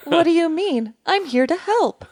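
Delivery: put-on AI voice. Playing an AI answering fears about lost jobs: put-on AI voice. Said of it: "I'll pretend to be an A I voice".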